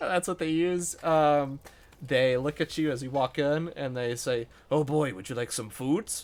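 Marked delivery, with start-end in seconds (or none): 4.7-6.2 put-on old half-orc man voice. Game master voicing the old orcish man behind the counter as you walk in: old orcish man voice. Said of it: "old orcish man behind the counter".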